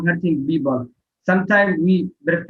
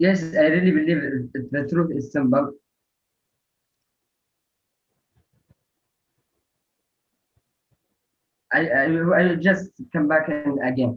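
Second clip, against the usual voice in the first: nervous, anxious, uneasy tone. Answering a question on whether truth is simple, nervous. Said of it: "I really get nervous to be honest".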